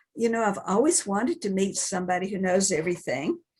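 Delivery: ordinary talk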